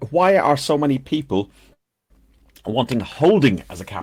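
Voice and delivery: normal talking voice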